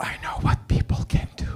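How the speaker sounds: mock composed, calm, grave, serious delivery. Retelling what a friend said when asked why he's so nice: imitating a friend's serious calm tone. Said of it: "he gets all serious ... calmly comes close to me and he goes".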